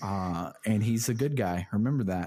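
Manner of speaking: plain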